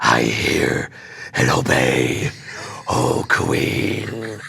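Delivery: very deep, very slow, rasping talking-wolf growl. Repeating a line he did in the play, in his put-on wolf character voice. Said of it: "what would a wolf sound like if he could talk? And I just came up with this voice".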